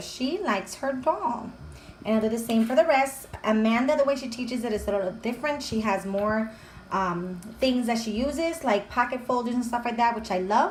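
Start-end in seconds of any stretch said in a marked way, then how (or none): 0.0-1.5 very slow, careful read-aloud voice. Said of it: "we read it together".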